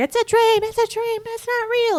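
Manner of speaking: put-on shrill, very high screaming with panic. Retelling a cornered character in a dream scene: imitating someone screaming. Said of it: "she's just screaming".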